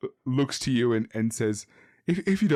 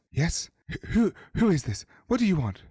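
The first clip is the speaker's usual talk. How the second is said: airy, very wispy, high woman's voice; 5 semitones higher than usual. Telling a story, a woman answers visitors through a barely opened window, very wispy voice. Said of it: "in a very wispy voice, a stern-looking woman says".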